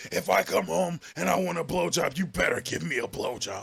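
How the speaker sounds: put-on angry voice. Retelling a man's words from a clip, imitating angry Vince McMahon voice. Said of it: "He went Vince McMahon like angry".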